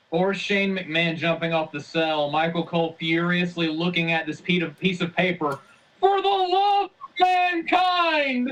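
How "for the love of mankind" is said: play-acted very high, deadpan, drawn-out shout. Imitating a commentator reading from paper, no emotion: Michael Cole shouting blankly. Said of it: "just blankly looking at this paper and just shouting".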